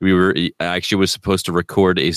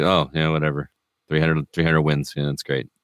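put-on flat voice, no emotion. Speaker mimicking a coach at a press conference, Belichick monotone impression. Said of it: "monotone, no emotion whatsoever".

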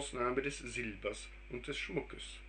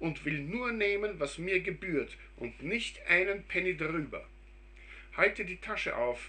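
raised, pitched-up exclaiming with barely reined-in delight; 6 semitones higher, 5 dB louder than usual. A narrator reading a story voices the mother, crying out in suppressed joy.

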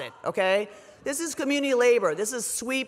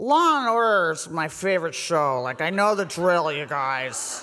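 play-acted slurred, drunk-sounding words; 5 semitones lower than usual. Recalling being handcuffed as sheriffs read rights, retelling slurred speech. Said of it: "I slurred".

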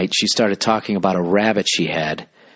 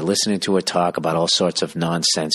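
plain

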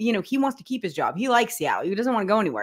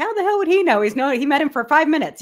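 acted, pitched-up, sarcastic, wisecracking tone; 6 semitones higher, 4 dB louder than usual. Retelling own first reaction to a player's quote: retelling own smart-ass remark. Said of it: "I was being a smart ass to you guy".

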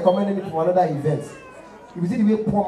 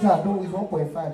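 ordinary talk

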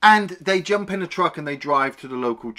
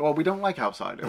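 normal talking voice

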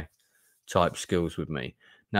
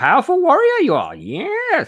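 bad put-on voice, very high, swooping, "yes" stretched; 7 dB louder than usual. While talking about creating a cool character sheet, do a not-great Yoda voice. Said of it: "I'm not great at doing the Yoda voice".

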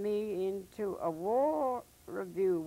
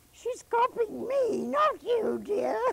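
very squeaky, very high-pitched, loud voice; 13 semitones higher, 6 dB louder than usual. Retelling a funny comedian's sudden remark, in a very squeaky voice. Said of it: "he suddenly says in a very squeaky voice".

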